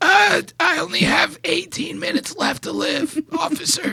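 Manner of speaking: high, faint, hushed, near-voiceless. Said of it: "This guy's got fucking no voice".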